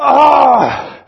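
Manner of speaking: loud, high, frustrated outburst. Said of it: "And so I went".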